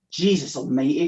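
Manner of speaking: muttered under the breath. Reading a story aloud, voicing the teacher's exclamation: muttered. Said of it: "she muttered".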